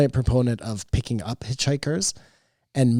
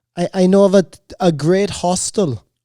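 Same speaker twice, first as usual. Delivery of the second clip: put-on generic European accent, higher; 7 semitones higher, 6 dB louder than usual. Offering to take a friend to the funny party, put-on European accent. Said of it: "it's just a European accent".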